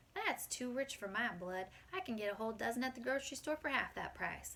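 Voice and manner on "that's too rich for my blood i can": usual speaking voice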